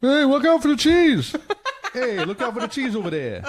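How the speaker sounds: very high-pitched, badly put-on British accent. Asked what the town crier said, speaker voices him in a put-on british accent. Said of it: "That's my British accent".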